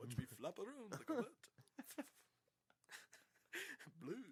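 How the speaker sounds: very high, hushed, soft, swooping vampire voice. Joking about bats and vampires, speaker slips into a Dracula voice. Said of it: "I got stuck on the Dracula voice".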